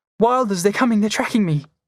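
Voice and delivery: frantic, high, rushed, panicked voice. Reading a story aloud, a girl asking for help: high, panicky voice. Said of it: "Voice real high and panicky".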